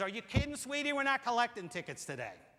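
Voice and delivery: put-on full New York accent. Quoting a station worker replying to a traveler who offered a ticket. New York accent. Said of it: "in her finest New York accent".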